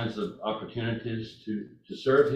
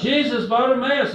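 put-on male yell, higher and louder; 13 semitones higher, 9 dB louder than usual. Retelling a blind man calling out to Jesus: imitating a man yelling out. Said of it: "he yells out".

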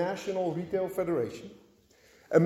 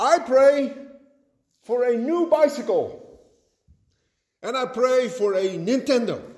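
play-acted little boy voice, high, slow, bellowing; 5 semitones higher, 3 dB louder than usual. Retelling a funny story of a boy praying: imitating a boy shouting a prayer. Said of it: "praying at the top of his lungs".

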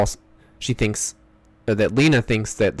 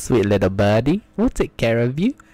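put-on British accent. Joking about British people calling women birds: put-on British accent. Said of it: "That's an awesome accent".

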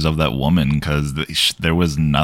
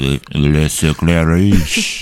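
put-on slow, childlike delivery, sounding words out. Showing how to say a French title: acting like a kid. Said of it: "You just gotta act like you're a kid".

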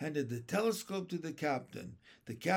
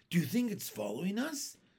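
ordinary delivery, nothing marked

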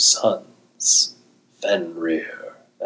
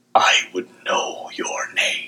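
deep, halting, broken whispered bass. Reading a story where the liesmith asks a human's name, in a broken bass voice. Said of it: "in a broken, bass voice dragged from the bottom of the ocean".

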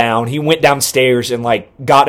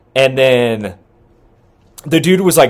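ordinary talk, nothing marked

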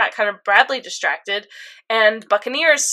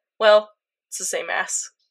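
put-on nonchalant voice, lower pitch; 4 semitones lower than usual. Retelling a scene where Greed answers Foo, imitating Greed, nonchalant. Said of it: "Greed just nonchalantly went".

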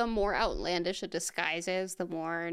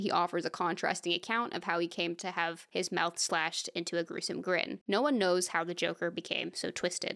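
ordinary talk, nothing marked

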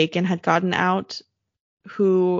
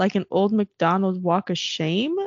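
plain

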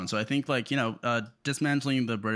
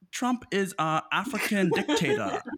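put-on, very high-pitched South African accent; 9 semitones higher than usual. Paraphrasing someone's remark about trump, put-on south african accent. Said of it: "that's my South African accent".

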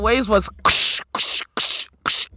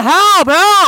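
raw, high, loud scream; 7 semitones higher, 8 dB louder than usual. Recounting almost drowning in a lake, the speaker re-enacts screaming for help. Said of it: "I'm screaming".

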